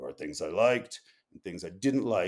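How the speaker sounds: put-on gruff voice with Maine accent. A writer recalls the hermit's reaction to his magazine article, gruff Chris Knight impression. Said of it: "he has sort of that gruff, main voice".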